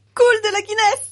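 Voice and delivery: very high-pitched, loud crying-out exclamation. Ellie reacts to the drink just served, exclaiming. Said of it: "S'écria Ellie".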